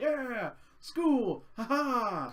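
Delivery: put-on brash loudmouth voice. Describing an anime's characters, imitating a loudmouth character. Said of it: "the loud mouth".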